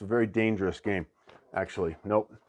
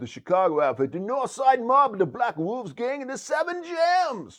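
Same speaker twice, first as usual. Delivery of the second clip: very high, bad, put-on Italian accent; 13 semitones higher, 3 dB louder than usual. Reading a board game rulebook's basic concepts aloud, in a bad Italian accent. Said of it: "Should I talk like an Italian this whole time?".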